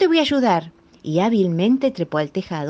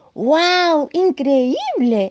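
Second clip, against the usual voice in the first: very high exclamation with long, drawn-out wow; 9 semitones higher, 4 dB louder than usual. Reading a story, the little lion cub answers his father, exclaiming. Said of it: "exclamó el leoncito".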